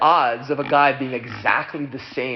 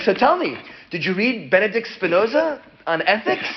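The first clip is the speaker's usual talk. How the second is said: put-on bouncy child-like eagerness, high; 8 semitones higher than usual. Retelling how a famous rabbi reacted to meeting an atheist: imitating an excited rabbi. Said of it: "He's all excited".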